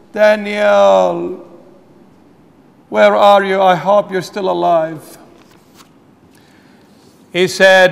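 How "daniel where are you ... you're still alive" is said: very sad, mournful, grieving tone, words drawn out. Retelling the Bible story of Daniel, speaking as King Darius in a very sad tone. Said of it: "the very sad tone of voice".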